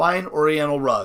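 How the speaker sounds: plain reading voice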